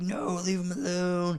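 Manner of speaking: high, sobbing, begging, crying voice. Retelling a movie fight scene, quoting a crying character: imitating Baja crying. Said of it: "Baja's crying through the entire thing".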